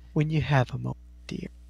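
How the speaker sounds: hushed, soft whispered word. Describing a colleague pulling you aside with an arm around you, whispering. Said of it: "she whispers".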